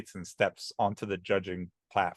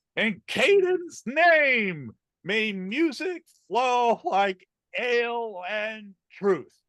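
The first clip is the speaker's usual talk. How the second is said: loud, drawn-out, very high bellow; 5 dB louder than usual. As the halfling judge Brother Kiv, raising his tankard high: Brother Kiv bellowing. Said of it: "he bellows".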